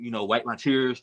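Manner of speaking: ordinary talk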